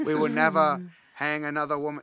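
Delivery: Boston accent, loud. Joking after a story about a hanging: JFK impression. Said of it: "I think that was J F K".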